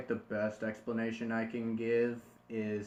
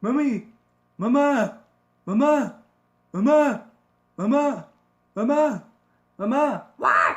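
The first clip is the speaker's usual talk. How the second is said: very high, loud, raspy yelling in British accent; 13 semitones higher, 15 dB louder than usual. Demonstrating how to voice Stewie, calling out repeatedly in a Stewie voice, raspy British. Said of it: "you want to give it a British accent ... Stewie has kind of a raspy voice".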